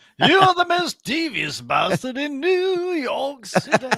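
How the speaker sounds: put-on vampire character voice. Quoting a character from a show to friends, doing a Laszlo impression.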